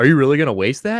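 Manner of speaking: mocking, fake-shocked, needling sarcastic tone. Retelling what a man said to another man who dropped a Cheerio: imitating a sarcastic remark. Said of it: "being sarcastic".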